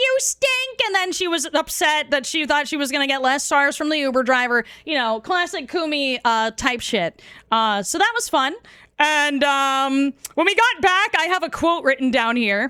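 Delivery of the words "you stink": put-on high-pitched screaming. Recounting someone in an Uber yelling about a smell: imitating Kumi screaming. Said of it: "Kumi was screaming like".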